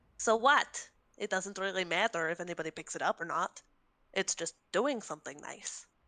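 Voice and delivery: little chaos gremlin voice. Voicing Cricket as she looks back at her, chaos gremlin voice. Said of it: "my go-to chaos gremlin voice".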